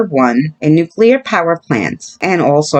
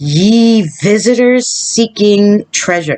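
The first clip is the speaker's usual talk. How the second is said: high, swashbuckling pirate voice; 5 semitones higher than usual. Reading a warning to treasure-seeking visitors, trying it in a pirate voice. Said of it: "I'm going to say this like a pirate".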